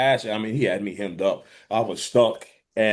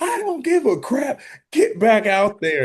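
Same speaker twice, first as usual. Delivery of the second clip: very high-pitched yelling; 13 semitones higher, 4 dB louder than usual. Retelling a coach yelling at him to return to the field: imitating Coach Bowles yelling. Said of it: "he's sitting there yelling at me".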